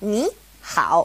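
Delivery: ni hao, ni rising second tone, hao dipping third. Showing learners the easier way: first syllable rising second tone. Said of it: "changes to a second tone and a third tone".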